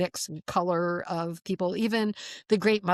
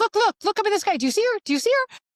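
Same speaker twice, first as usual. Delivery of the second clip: shrill, very high, loud yelling; 6 dB louder than usual. Retelling calling to her husband to look at the sky: retelling own yell. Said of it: "I'm yelling at him going".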